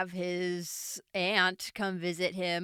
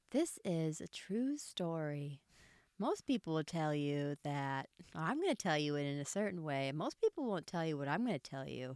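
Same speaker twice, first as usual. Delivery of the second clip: put-on soft little-girl voice, narration style; 3 semitones lower, 8 dB quieter than usual. Asked to give the movie breakdown in the little girl narration voice. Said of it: "do it in the little girl narration voice that we hear in the movie".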